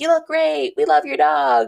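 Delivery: high, loud, tipsy yelling like a crowd.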